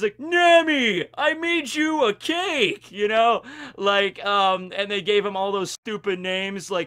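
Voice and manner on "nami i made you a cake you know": put-on dopey Brooklyn accent, much higher, slower. Speaker recounting how 4Kids voiced Sanji, quoting his line to Nami: dopey Brooklyn accent as Sanji. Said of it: "really dopey Brooklyn accent".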